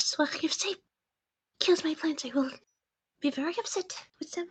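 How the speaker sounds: quiet muttering under the breath. Voicing a character who grabs her bag: muttering under her breath. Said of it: "mutters under her breath".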